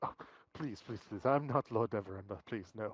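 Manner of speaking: laughed-through, pleading, dismissive tone. Voicing a character denying he is Lord Neverember: laughing while talking. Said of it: "he sort of laughs and goes".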